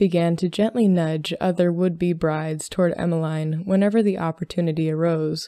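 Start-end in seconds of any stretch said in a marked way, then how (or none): none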